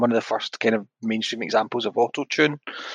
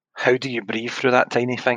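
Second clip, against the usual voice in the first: ordinary talk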